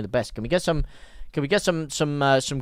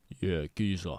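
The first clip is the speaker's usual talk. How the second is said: voice dropped way down, very low and hushed; 8 semitones lower, 7 dB quieter than usual. Asking whether to speak in a very low sound, then doing it: very low voice. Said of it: "Or should I speak like this in a very low sound?".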